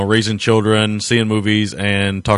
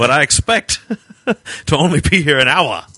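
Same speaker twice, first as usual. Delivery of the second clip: bad put-on British actor voice, higher; 6 semitones higher than usual. Joking about an actor cashing a paycheck, bad Malcolm McDowell impression. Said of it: "my really bad Malcolm McDowell impression".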